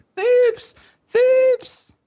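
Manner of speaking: very high, loud shriek at full volume.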